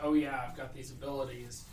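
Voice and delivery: plain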